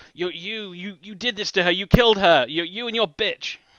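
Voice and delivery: venomous, vicious, stammering, spat out. Narrating to the group, voicing a man who screams at them: vicious screaming. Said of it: "viciously screaming like bile at you guys".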